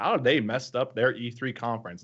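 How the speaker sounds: plain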